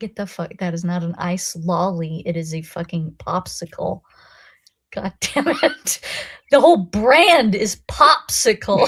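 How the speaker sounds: mock hateful, spitting American rant, pitch climbing. Recalling a debate with a friend over popsicles, retelling a venomous rant. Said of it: "The hatred, that the venom".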